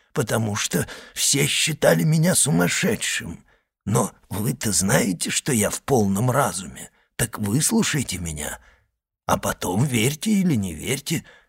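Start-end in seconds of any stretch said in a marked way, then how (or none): none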